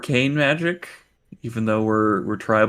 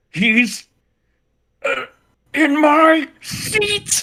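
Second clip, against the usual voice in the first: high-pitched, forced out through gritted teeth; 3 dB louder than usual. A player's character stands up in the game, speaking through gritted teeth. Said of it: "stand up and gritted teeth and be like".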